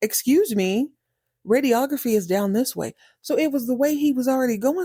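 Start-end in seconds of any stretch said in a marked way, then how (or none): 0.0-2.9 put-on annoyed nurse voice with attitude. Retelling the tired nurse correcting the janitor: imitating a nurse with attitude. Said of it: "And she's like".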